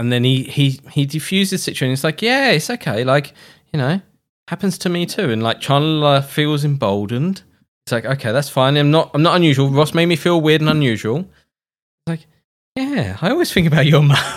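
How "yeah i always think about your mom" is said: put-on soft, smug, caring tone. Acting out Ross defusing things with Chandler, imitating his soft smugness. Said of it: "the way he says it with this kind of like soft smugness".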